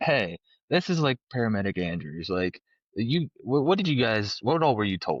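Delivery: ordinary talk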